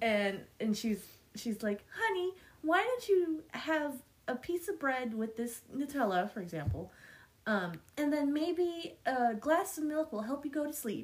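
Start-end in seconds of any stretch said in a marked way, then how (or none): 1.9-11.0 mock, high, rehearsed commercial spokesperson read. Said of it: "everything she says sounds so rehearsed".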